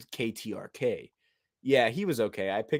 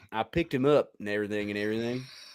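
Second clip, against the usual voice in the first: stretched-out American Southern drawl. Repeating a quote after being asked to: southern drawl. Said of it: "with a Southern draw".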